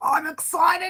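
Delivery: put-on excitable character voice, high-pitched and excited. Trying to do Big Kev's voice: Big Kev voice. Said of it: "Big Kev's voice".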